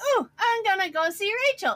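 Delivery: put-on excitement. Retelling running off to see rachel and forgetting the ender chest, retelling getting all excited. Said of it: "I got all excited".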